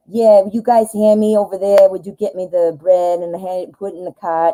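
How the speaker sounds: fake, put-on New Yorker way of talking. Recalling shopping at the store with a put-on accent, in a fake new york accent. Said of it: "I would act like I had a New York accent".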